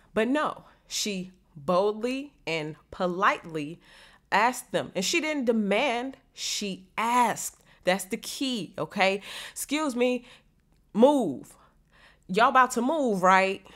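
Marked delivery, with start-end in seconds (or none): 9.5-13.6 pushy, bossy, commanding tone. Showing a demanding way to ask people to move: acting out a commanding demand.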